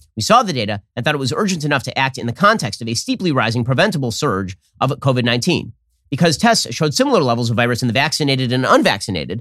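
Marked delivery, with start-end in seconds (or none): none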